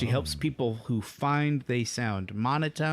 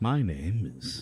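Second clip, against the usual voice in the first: put-on public radio voice, lower; 5 semitones lower than usual. Retelling how they introduced an earlier episode, put-on NPR voice. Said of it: "pretended to use our N P R voices".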